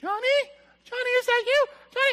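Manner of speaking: put-on terrified horror-victim cry, shrill and loud. Acting out a girl in a horror film hearing a sound: imitating a scared horror-film girl. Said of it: "they start moving towards the sound".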